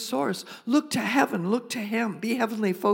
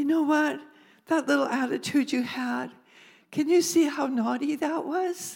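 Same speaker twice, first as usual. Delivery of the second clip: put-on sweet voice, pitched higher; 4 semitones higher than usual. Acting out God correcting a believer about an attitude: sweetly voicing God. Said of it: "He's so sweet the way he says it".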